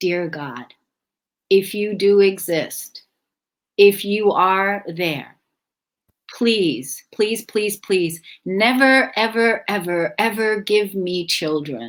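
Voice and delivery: crying, begging, tearful pleading. Recalling praying to God as a child at bedtime, retelling a crying prayer. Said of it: "I would cry and I would go".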